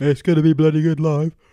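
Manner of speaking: talking through a yawn. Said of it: "Just that again without the yawn".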